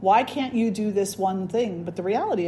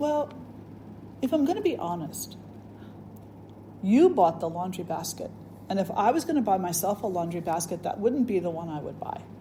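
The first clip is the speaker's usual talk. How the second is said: mock grave, hushed, whispered solemn delivery; 6 dB quieter than usual. Retelling her engineer husband's answer to her question, imitating a solemn tone. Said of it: "he says very solemnly".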